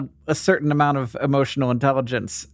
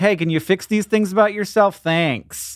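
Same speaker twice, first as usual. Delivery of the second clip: normal talking voice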